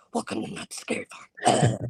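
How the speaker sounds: whispered, very creepy demonic voice. Retelling a line they delivered for Not Scary Farm: most demonic voice. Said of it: "I said it in the most demonic voice".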